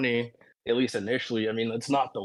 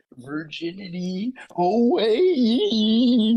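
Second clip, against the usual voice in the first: very high, stretched-out, swooping heroic shout; 10 semitones higher, 6 dB louder than usual. Retelling how a friend would channel Mermaid Man: imitating a friend's Mermaid Man-style shout. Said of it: "And he would say it like that".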